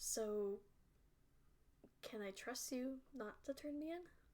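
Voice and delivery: hushed, barely audible, under-the-breath mutter. Voicing a character who notices the guards watching: under her breath. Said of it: "under her breath".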